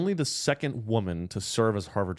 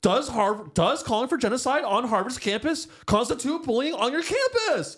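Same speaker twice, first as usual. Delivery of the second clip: mock harsh angry yelling, much higher; 14 semitones higher, 3 dB louder than usual. Acting out how she asked the question, mimicking a yelling girlfriend. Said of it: "She said it like a girlfriend yelling".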